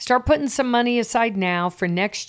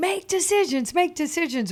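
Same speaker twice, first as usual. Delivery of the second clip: acted-out yelling at a much higher pitch; 7 semitones higher than usual. Retelling urging a girl on, the speaker acts out their own yelling. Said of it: "So I'm just yelling".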